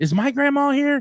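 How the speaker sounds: mock very high, giddy, all-excited blurt. Retelling a story and acting out what he said: imitating him all excited. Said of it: "all excited".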